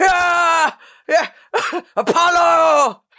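loud, very high, put-on yell. Retelling what a film fighter shouts at a mountain top: imitating a shout. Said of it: "Is that what he shouts?".

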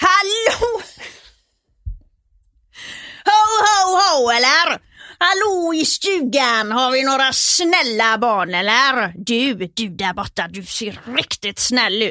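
Gothenburg Swedish dialect voice. Asked to show it off, speaker plays Santa Claus in a Gothenburg accent. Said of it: "prata göteborgska".

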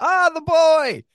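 mock very high-pitched, friendly shout. Retelling a producer's greeting at the studio door: imitating R J shouting. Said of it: "he'd just shout at me".

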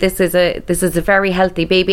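ordinary talk

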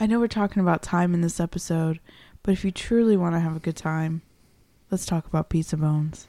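put-on sultry, seductive voice. Wrapping up an episode and slipping in a segue, in a sultry voice. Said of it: "Why are you using that voice?".

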